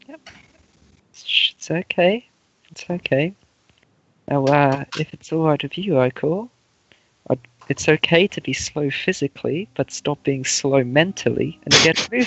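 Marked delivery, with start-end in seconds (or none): 1.1-12.3 low, soothing, consoling tone. Speaking in character to a creature during a game: low consoling tone. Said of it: "speaking in this low, almost, like, cons-, consoling tone".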